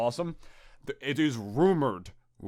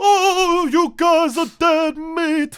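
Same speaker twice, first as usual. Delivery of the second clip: very high, very slow, loud old-timey New York cartoon voice; 11 dB louder than usual. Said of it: "if he sounds like that".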